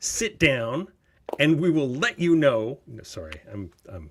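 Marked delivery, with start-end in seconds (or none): 0.0-2.8 put-on heated angry voice, higher and louder. Retelling own reaction to something read: imitating own heated retort. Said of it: "Just know that I get heated sometimes".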